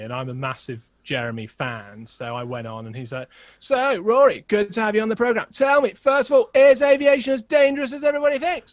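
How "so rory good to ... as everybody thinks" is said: very high, very loud, belting presenter voice. Retelling being asked on the programme: Jeremy Vine impression. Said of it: "Good impression, by the way".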